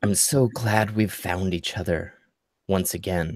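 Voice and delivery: faint, very wispy voice, sounding far off. Game master voices Kieran Elderwin as Lyra enters the room, Kieran Elderwin's wispy, far-away voice. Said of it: "a very wispy, almost far away voice".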